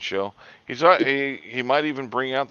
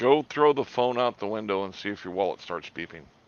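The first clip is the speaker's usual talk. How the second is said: ordinary talk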